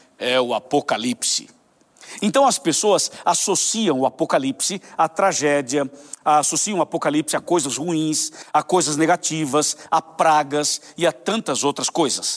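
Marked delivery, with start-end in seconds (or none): 0.2-1.5 weighty, solemn, deep and grave announcer delivery. Retelling a news anchor's last words, looking at the camera: imitating a deep grave voice. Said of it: "com aquela voz bem grave disse".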